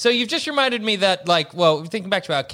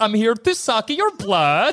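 weird, laid-on, put-on Swedish accent; 3 semitones higher than usual. Imagining playing Dracula wrong, the speaker does a weird Swedish accent. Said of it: "do a weird Swedish accent".

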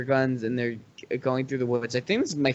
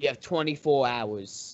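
put-on Brooklyn accent, much quieter; 4 dB quieter than usual. Recounting a scene where Kingpin talks to Doc Ock, in a Brooklyn accent. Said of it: "that was a good Brooklyn accent".

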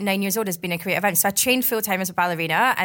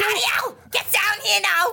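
Liverpool Scouse accent, pitched very high; 13 semitones higher than usual. Asked to do their Scouse accent for the group, calling someone down: Scouse accent. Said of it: "Do your Scouse accent for us".

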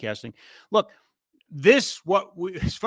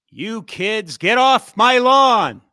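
put-on booming, very slow, high, drawn-out cranky old-man yell; 6 semitones higher, 9 dB louder than usual. Joking that they sound like old men yelling: mock old man yelling. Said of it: "we sound like old men yelling at clouds".

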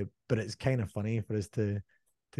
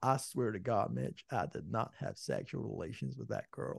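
put-on whispered, breathy, hushed voice with American accent; 8 dB quieter than usual. Joking that every American accent turns out the same: Bill Clinton impression. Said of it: "I always end up eventually sounding like Bill Clinton".

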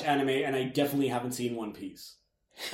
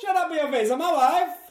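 much higher, mock Italian accent; 14 semitones higher, 4 dB louder than usual. Riffing on the idea of an Italian Borat: Italian Borat impression. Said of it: "Italian Borat".

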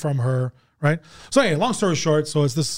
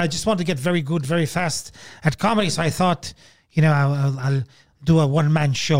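weird, creepy, put-on English accent. Comedian imitating a man who wants to get good at comedy fast, creepy english accent. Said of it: "creepy English accent".

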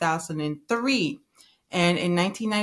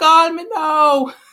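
very high, loud, belted fake Jamaican accent; 9 semitones higher, 10 dB louder than usual. Quoting the TV personality they knew as Miss Cleo, fake Jamaican accent. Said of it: "she had like the little fake Jamaican accent and she'd be like".

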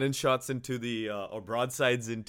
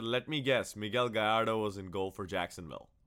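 usual speaking voice

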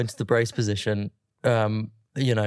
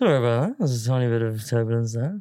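mumbled, low-energy airline pilot announcer-style voice. Joking that all pilots sound the same, imitating a pilot's announcement, mumbling airline pilot voice. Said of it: "They do this mumble".

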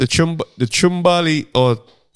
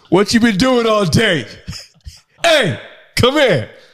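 put-on aggression, higher pitch; 6 semitones higher than usual. Acting out a woman home after a hard day's work: mock aggressive. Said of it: "Why is it so aggressive though?".

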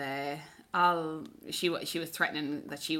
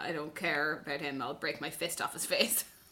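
ordinary talk

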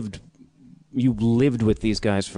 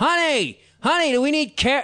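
mock, high-pitched yell projected as if far off. Retelling how a man called to his honey in a grocery store, imitating someone yelling across a store. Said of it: "he's like yelling across the grocery store like".

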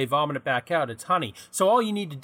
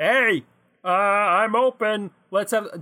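put-on tiny robot voice, higher, louder, slower; 4 semitones higher, 4 dB louder than usual. Imagining a tiny robotic man inside a microwave, speaking in a little robot man voice. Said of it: "Am I just gonna keep doing this voice?".

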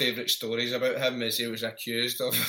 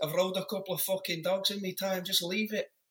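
exasperated, higher-pitched put-on Mancunian accent; 7 semitones higher, 4 dB quieter than usual. Retelling what an exasperated man said when questioned, imitating the man's accent. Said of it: "i imagine that in his accent".

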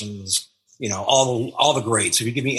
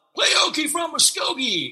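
very high, slow, drawn-out heckling yell. Retelling a concert where an audience member called out: imitating someone yelling. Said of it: "somebody yelled out".

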